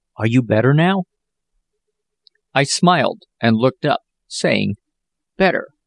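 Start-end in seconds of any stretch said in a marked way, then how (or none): 0.2-1.0 tender, gentle whisper. Reading Jack's question to Ralph as Ralph opens his eyes, tender whisper. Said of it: "whispered Jack tenderly".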